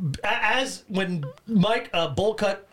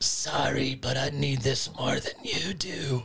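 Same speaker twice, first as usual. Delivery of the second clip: low, deep, barely voiced whisper; 5 semitones lower, 4 dB quieter than usual. Recounting a movie scene, doing a guy's line: whispered. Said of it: "whisper yeah here".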